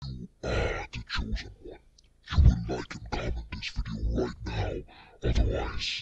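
very low, hushed, echoey evil demon voice. Tutorial previewing a processed voice effect, evil demon voice. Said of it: "make your voice sound like an evil demon ... give like a more echoey effect".

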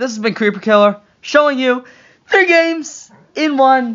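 voice cracking mid-line and at the end. Signing off a gaming video and thanking viewers, voice cracking. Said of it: "My voice cracked".

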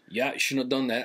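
put-on Southern drawl. Imitating a direct man of few words: imitating a southern drawl. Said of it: "the southern drawl".

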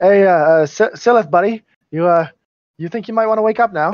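attempted Australian accent. A player voicing their character waking a sleeping companion, in an attempted Australian accent. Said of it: "That didn't sound very Australian".

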